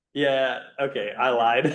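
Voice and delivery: slow, laughing speech with a chuckle. Retelling how an electronics seller admitted he lied: imitating someone laughing while talking. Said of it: "he just starts laughing like".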